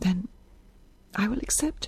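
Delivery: barely audible, very quiet, nearly inaudible voice. Isabel accepts the unconditional offer, in a nearly inaudible voice. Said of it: "in a nearly inaudible voice".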